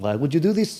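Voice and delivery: upset-sounding put-on Nordic accent. The speaker shows how they talk when upset, in a Nordic accent. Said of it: "And that's my Nordic accent".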